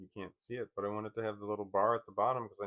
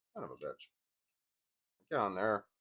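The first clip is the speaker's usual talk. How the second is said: rattled, flustered, panicking, swooping outburst. Struggling to fit a part into place: freaking out. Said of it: "Sorry, I'm freaking out".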